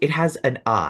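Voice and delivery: ordinary talk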